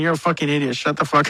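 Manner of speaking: usual speaking voice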